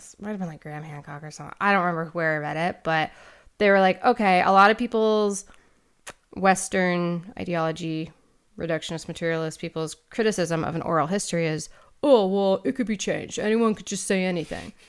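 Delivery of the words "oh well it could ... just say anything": put-on, typical bro voice. Quoting a typical critic of oral history to a co-host, in a bro voice. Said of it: "You have that bro voice".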